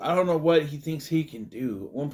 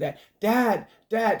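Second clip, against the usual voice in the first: put-on play-acted young girl voice, high-pitched yell; 8 semitones higher, 4 dB louder than usual. Recounting a girl refusing to leave without her dad, retelling a girl yelling. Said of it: "She's yelling".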